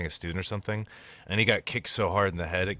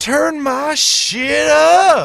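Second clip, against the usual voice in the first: very high, very loud, slow, drawn-out hyped yell; 16 dB louder than usual. Retelling an old man smacking the table before his show: imitating a pumped-up yell. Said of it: "this old man getting really pumped up".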